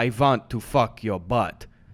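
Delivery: low, slow vampire voice, each word drawn out. Taking another run at a Dracula line: Dracula voice. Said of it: "take another run at the Dracula saying".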